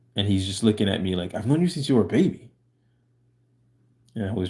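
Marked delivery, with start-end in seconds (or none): 1.4-2.5 put-on, angry, betrayed-sounding, accusing tone, pitched up. Retelling what he said on hearing a hello: imitating someone saying it angrily. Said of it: "He was mad when he was saying it".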